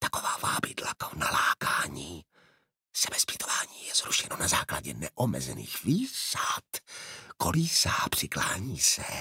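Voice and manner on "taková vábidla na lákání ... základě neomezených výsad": soft, hushed, conspiratorial whisper. He suddenly crouches and adds a further remark, whispering. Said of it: "šeptem dodal".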